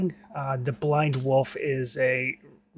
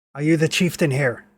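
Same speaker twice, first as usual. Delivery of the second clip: very gruff, rough voice; 4 dB louder than usual. Voicing a figure calling up from the woods: very gruff voice. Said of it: "very, very gruff voice".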